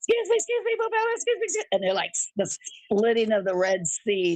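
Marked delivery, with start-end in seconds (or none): 0.0-1.6 shrill, very high-pitched shouting. Retelling how a friend pushed through a crowd: imitating someone yelling. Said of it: "She's yelling".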